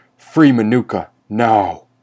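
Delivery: loud, commanding, demanding tone. Otto, confronting his unmasked brother, gives him an order, demanding. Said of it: "Otto demanded".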